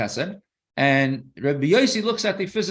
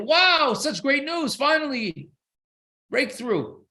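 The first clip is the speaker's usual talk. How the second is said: thrilled, excited, very high-pitched outburst; 11 semitones higher than usual. Retelling a parable of a doctor reading a chart: imitating an excited doctor. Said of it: "He's all excited".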